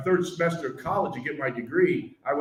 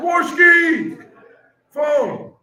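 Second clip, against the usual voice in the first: very loud, shrill, high-pitched yell; 11 semitones higher, 10 dB louder than usual. Recalling a phone call down the hall, retelling a yell. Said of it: "I hear someone yell".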